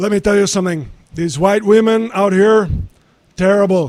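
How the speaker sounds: raspy, loud, high voice. Showing how the rasp was found: George Lopez impression. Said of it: "doing a George Lopez impression".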